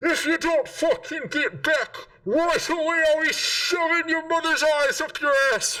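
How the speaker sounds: very high-pitched, shrieking male scream. A narrator voices a man heard screaming inside a large building: screaming male voice. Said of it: "male voice screaming".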